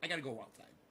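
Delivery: dog voice, plain talking. Voicing a pet dog who says it needs the bathroom: voicing the dog. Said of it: "He's like".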